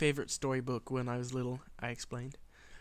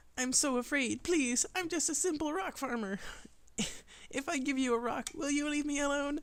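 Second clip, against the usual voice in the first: very high, squeaky, pleading voice; 13 semitones higher than usual. Narrating a character who makes a patched pony plead: high-pitched pleading. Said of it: "squeaking random ple pleads in a high-pitched voice".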